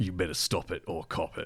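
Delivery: very quiet, very gruff, low, rough voiceover voice. Mimicking a scare-tactic voiceover that warns you off, very gruff voice. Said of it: "it's always in like a very gruff voice as well".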